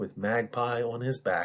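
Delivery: plain reading voice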